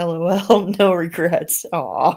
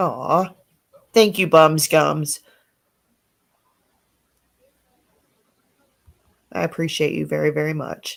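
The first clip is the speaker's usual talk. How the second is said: tearful, crying speech pushed out through tears; 2 semitones lower than usual. Thanking someone who promised to pray for them every day, crying while talking. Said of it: "Would you quit crying?".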